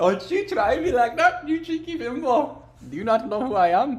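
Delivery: put-on, fake Indian accent. Talking back to someone who hung up a phone call: put-on Indian accent. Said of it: "that's fucked up to do an Indian accent".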